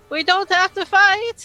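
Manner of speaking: yelling really loud. Shouting to the wolves in character so everyone can hear: yelling really loud. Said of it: "I'm just yelling that really loud".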